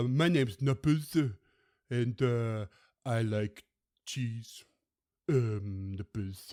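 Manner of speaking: slow, dopey, dim-witted put-on cat voice. Voicing a cat that was not all there: put-on dim-witted cat voice. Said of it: "she would always talk like".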